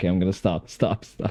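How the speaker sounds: normal talking voice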